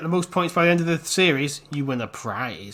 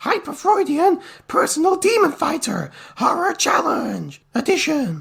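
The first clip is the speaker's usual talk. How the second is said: arcade game announcer voice, higher; 11 semitones higher than usual. Announcing this week's challenge title: arcade announcer voice. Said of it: "in a non-arcade voice".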